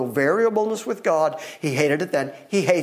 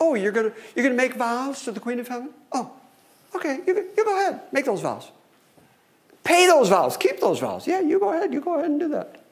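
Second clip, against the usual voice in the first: put-on sarcastic tone, much higher pitch; 9 semitones higher than usual. Retelling a scripture passage, the speaker quotes God with mock sarcasm. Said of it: "he's a little on the sarcastic side here".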